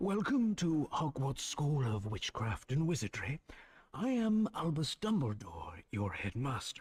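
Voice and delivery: put-on light Irish accent throughout. Explaining Harry Potter, voicing Albus Dumbledore at Hogwarts, soft Irish accent. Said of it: "a soft Irish accent".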